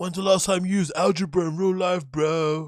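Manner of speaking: high, loud, sneering mock voice of cocky dropout kid.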